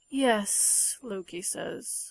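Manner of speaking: ordinary delivery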